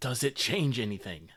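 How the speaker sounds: rasped-out harsh whisper. Voicing a character in a tabletop game scene: harsh whisper. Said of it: "In a harsh whisper".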